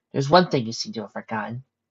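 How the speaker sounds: usual speaking voice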